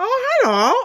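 very high, weird, squeaky turkey voice. Retelling how a child talks with her turkey hand puppet: super weird turkey voice. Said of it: "she uses this turkey voice".

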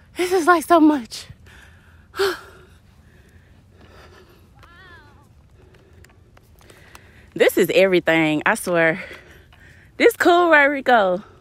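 out of breath, panting between words, high and loud. Playing with the kids at the sand disc, talking to rico; out of breath. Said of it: "I'm so out of breath".

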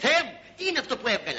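plain reading voice

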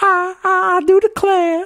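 poor attempt at a put-on Southern belle voice. Joking about Skyler as a Southern belle: failed Southern belle accent. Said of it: "I can't do a Southern accent".

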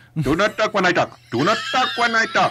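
convincing Indian accent. Showing how some indian people talk, in an indian accent impression. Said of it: "You do that very well".

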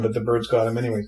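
normal talking voice

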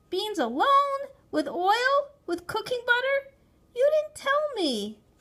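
very high outburst. A boy answering his mother after she shouts at him, protesting. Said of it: "I protested".

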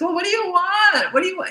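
very high, exasperated, frazzled, worn-out voice at wits' end. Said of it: "the old you who was more like this".

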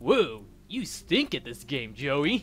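put-on surfer dude accent. Voicing a card-game opponent who taunts joey: surfer accent. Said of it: "I'm giving him a surfer accent instead".

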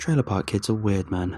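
ordinary delivery

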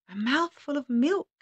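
thin, clear, high voice. Narrator voices someone below the door answering the farmer: clear, thin voice. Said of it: "said the clear, thin voice from below".

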